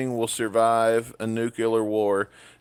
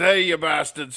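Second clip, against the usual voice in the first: put-on old rocker voice; 6 semitones higher than usual. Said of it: "he's talking like this".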